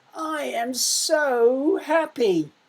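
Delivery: very slow, high, stretched, overflowing intense emotion. Rereading a sentence to pupils choosing punctuation, with intense emotion. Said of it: "show a bit of intense and intense emotion".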